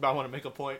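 speaking with mouth full of food. Cutting into a movie discussion to make a point, talking with mouth full. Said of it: "I have like food in my mouth".

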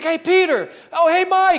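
mock excited, loud, drawn-out hollering. Retelling how he greets his buddies filing out, imitating him yelling their names. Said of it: "he's yelling all of their names".

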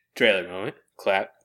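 ordinary delivery

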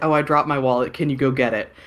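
ordinary talk, nothing marked

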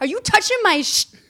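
mock very high, shrill, loud, hostile angry voice. Retelling what a seated passenger said when her bag was pushed away, imitating her turning on the speaker. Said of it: "she turns on me and she's like".

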